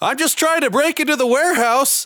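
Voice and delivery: very high-pitched, loud shouting. Voicing Tim calling out to the guards: yelling in character. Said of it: "Tim yells out and he goes".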